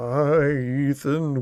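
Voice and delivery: spooky, scary voice. Offering to scare a friend, the speaker greets Ethan in a scary voice. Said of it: "You want me to do it like in a scary voice".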